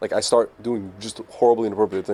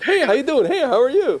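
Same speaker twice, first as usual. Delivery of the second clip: very high, loud, put-on fake-friendly voice; 6 dB louder than usual. Retelling a comedy skit about fake people at parties: imitating a fake friendly greeting. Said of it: "people who are fake and, and it makes you fake".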